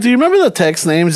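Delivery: ordinary delivery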